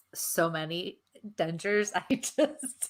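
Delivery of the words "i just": high voice, giggling through the words. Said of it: "I'm laughing".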